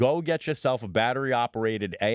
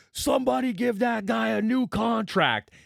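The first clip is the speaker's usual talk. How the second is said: mock very high, rasping, drawn-out scream; 11 semitones higher than usual. Retelling how a friend screamed out at a passing player: imitating Mike screaming. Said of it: "He screams out".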